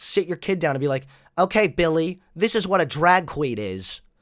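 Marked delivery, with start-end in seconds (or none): none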